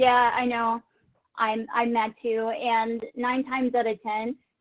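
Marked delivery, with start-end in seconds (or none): none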